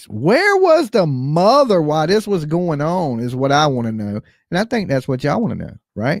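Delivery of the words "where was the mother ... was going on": high-pitched character voice with a swooping tune. Speaker asks a question in their best Nancy voice. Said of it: "in my best Nancy voice".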